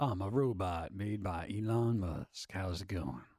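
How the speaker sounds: very deep, smooth, cool voice.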